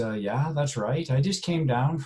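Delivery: bad put-on Irish accent. Retelling a man asking for irish records, the speaker does a poor irish accent. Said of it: "please forgive my poor attempt at an Irish accent".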